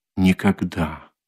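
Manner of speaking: hushed whisper. Narrator reads Dunya answering Svidrigailov's question, whispering. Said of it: "прошептала Дуня".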